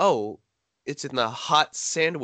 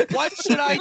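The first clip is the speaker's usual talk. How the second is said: acted shouting, higher; 13 semitones higher, 4 dB louder than usual. Retelling how a teacher opened the door: imitating someone shouting for help. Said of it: "Just shouts down the hallway".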